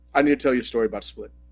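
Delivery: put-on glum, dejected, soft, downcast delivery. Retelling how Gary answered a question about Split: imitating Gary's downcast tone. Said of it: "completely downcast, sad face".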